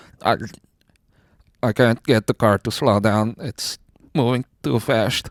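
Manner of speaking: very slow, very drawn-out, strained speech. Describing drivers under G-force, the speaker imitates a driver straining to talk. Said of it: "like standing in front of a blow dryer".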